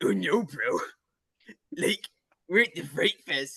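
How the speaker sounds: silly cartoon bro voice. Explaining a Regular Show character's catchphrase, doing a Muscle Man voice. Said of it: "he has this silly voice".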